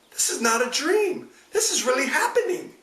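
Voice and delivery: very high, frantic, slightly crazy voice. Ending an episode with an out-of-context quote, in a crazy Mia Farrow voice. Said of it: "Tried to say that with my crazy Mia, Mia Farrow voice".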